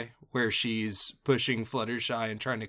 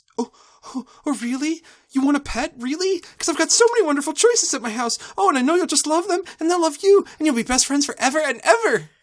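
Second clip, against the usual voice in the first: booming, very high-pitched, very loud character voice; 10 dB louder than usual. Reading out a quoted line from this season: loud Fluttershy voice. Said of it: "She's saying it in her loud voice".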